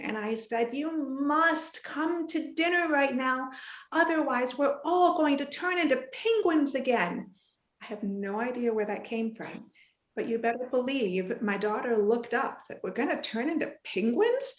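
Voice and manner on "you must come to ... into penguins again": put-on silly, playful, teasing yell. A parent recalls calling her eight-year-old daughter to dinner, retelling playful yelling. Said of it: "be playful in my yelling".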